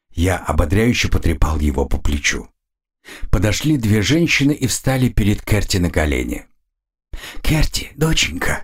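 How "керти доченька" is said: high-pitched whisper, not trembling. A woman kneeling before her daughter Kerti says her name, whispered. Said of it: "прошептала она".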